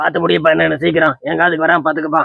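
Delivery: condescending, talking-down local councillor voice.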